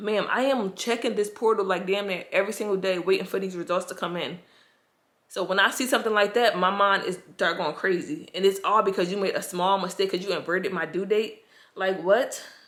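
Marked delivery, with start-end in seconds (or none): none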